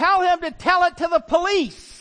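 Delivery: very high, shrill yell from far off. Telling of apologizing at a door, the speaker imitates the mom yelling from the back of the house. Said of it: "I hear her yell from the back".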